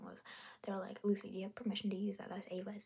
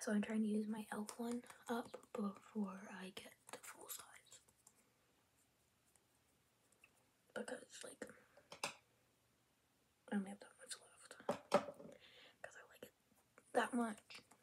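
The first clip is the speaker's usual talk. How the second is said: quiet, soft-spoken voice; 5 dB quieter than usual. A makeup streamer talks viewers through her products, talking kind of quiet. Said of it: "sorry if I'm talking kind of quiet".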